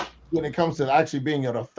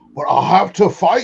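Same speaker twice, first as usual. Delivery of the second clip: sudden, raised, put-on Scottish accent; 5 semitones higher, 8 dB louder than usual. Answering a made-up warning about gladiator pits in a put-on Scottish accent. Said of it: "I don't know why you're Scottish all of a sudden".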